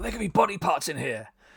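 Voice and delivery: over-the-top put-on excitement.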